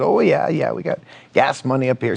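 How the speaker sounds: full-effort put-on Canadian accent. Retelling a man's reply about raising money for a movie, Canadian accent. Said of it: "I'm going to use my best Canadian accent".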